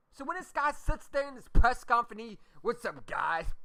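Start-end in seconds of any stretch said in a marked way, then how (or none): 2.6-3.4 silly, mocking, clown-like delivery. Retelling a press conference greeting: imitating someone sounding like a clown. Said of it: "you sound like a clown".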